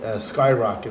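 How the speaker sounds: ordinary delivery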